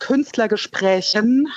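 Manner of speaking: plural ending stressed, said slowly.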